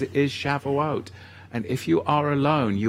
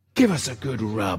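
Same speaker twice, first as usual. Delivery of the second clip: put-on Irish or Scottish sounding accent. Continuing the bit after joking about the accent, put-on Irish or Scottish accent. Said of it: "was that Scottish?".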